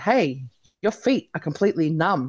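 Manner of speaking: ordinary talk, nothing marked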